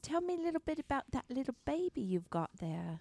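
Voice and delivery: very soft, gentle, careful, cautious coaxing. Speaking in character to a woman holding a baby: very soft, cautious voice. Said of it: "Very softly, very cautiously".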